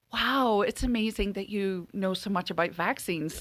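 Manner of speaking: thick, heavy, dripping sarcasm. Speaker recounts replying to a man who studied business: retelling heavy sarcasm. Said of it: "Being heavily sarcastic".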